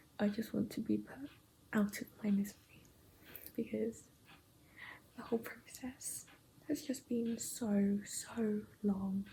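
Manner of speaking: nervous, weary, unvoiced, worn-out whisper.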